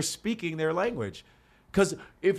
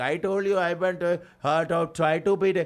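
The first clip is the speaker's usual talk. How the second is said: slow put-on Indian accent on English words. Showing how Indian speakers sound in English: put-on Indian accent. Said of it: "look at Indian".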